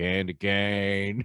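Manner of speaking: put-on haunting movie character voice. Describing a movie voice stuck in their head, imitating a haunting movie voice. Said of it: "that voice will just pop into my head".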